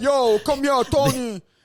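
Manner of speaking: Italian-American street-guy accent. Describing two types of Italian, the speaker demos one in a mock Italian-American accent. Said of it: "there's two types of Italian".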